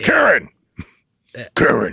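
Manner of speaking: gruff, rough call with big pitch swoops. Describing a YouTube dad who always yells his wife's name, retelling Bat Dad yelling. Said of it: "he's always yelling".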